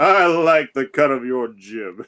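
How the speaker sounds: huge, very loud, chesty, booming hero voice. Voicing Hercules in a role-play, loud booming Hercules voice. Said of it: "Hercules' loud, booming voice".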